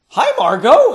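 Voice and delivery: in surprise. A man greets a woman who came looking for him, surprised. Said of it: "the surprise still audible in his voice".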